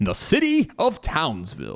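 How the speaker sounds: big, showy announcer voice with swooping pitch. Recording a bit, the speaker switches into an announcer voice. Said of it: "That's my announcer voice".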